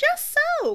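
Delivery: very high, loud exclaiming cry. Colin backs up Benedict's remark to Anthony, exclaiming. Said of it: "Colin exclaimed".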